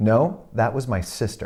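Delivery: put-on cold, deadpan delivery. Retelling how a woman at an audition answered: imitating a cold, deadpan reply. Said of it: "cold, dead in the eye".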